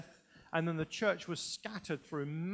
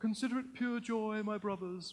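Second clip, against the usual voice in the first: high, put-on pious reading voice; 5 semitones higher than usual. Mocking how people read the Bible aloud, in a put-on pious reading voice. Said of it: "you're reading it with some pious kind of voice".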